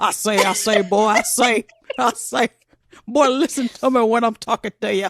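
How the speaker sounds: put-on Southern accent, cartoon rooster style voice. Imitating a movie detective's overdone Southern accent: Foghorn Leghorn voice. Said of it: "Foghorn Leghorn".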